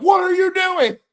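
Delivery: high, loud scream. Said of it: "screamed at the T V like".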